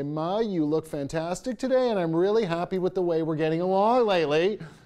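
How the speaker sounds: thick sarcasm in a sincere wrapper, loud and high. Showing how to sarcastically compliment a mother: sarcastic, demonstrating sarcasm. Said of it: "I could be really sarcastic and say".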